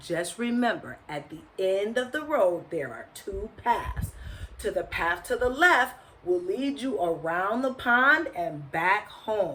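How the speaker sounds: plain reading voice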